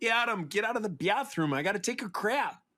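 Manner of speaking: put-on Buffalo-to-Detroit Great Lakes accent. Mimicking what the ex-wife used to say to Adam: Lake Erie accent. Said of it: "a certain Lake Erie accent".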